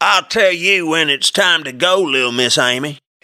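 smarmy, very high-pitched teasing taunt. A man speaks to Amy after she has turned away from him, teasing. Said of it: "he teased".

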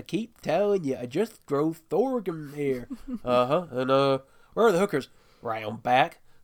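put-on deep southern American accent. Trying out a short bit for the others, in a southern us accent. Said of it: "I'll try and do my bit".

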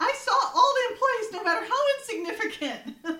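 very high, loud defensive squeak.

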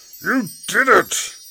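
gruff, high, very loud shout. Narrating, the littlest creature cries out to the others: gruff little-creature voice. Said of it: "Cried out a surprisingly gruff voice from the littlest creature".

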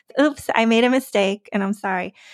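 normal talking voice

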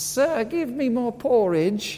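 put-on slow British accent, high-pitched. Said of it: "you have a British accent".

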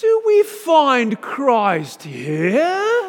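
put-on heavy, very high, loud, swooping sing-song British accent. Retelling how he questioned a room of seminarians at the chalkboard, thick british accent. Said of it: "in a very thick British accent".

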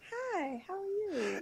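polished professional voice, very high and very soft. Showing a podcast co-host what their professional voice sounds like: professional voice. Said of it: "my professional voice is like".

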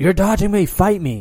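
shrill, very loud, high-pitched yelling call-out. Retelling a fighter calling out a rival: imitating someone yelling. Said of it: "I don't know why he's yelling at me".

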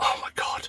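soft, hushed whisper under the breath. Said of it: "I was like".

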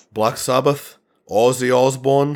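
failed, bad put-on Brummie accent attempt. Trying the accent before admitting you can't do it, speak in a failed brummie accent. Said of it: "I can't do it".

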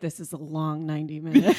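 mock hushed whisper. Retelling what another speaker said during the movie: imitating someone whispering. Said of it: "He whispered to me".

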